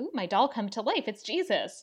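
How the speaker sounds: overjoyed, thrilled, really happy little outburst. Acting out the nun in a movie premise: really happy. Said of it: "the nun is just, like, really happy".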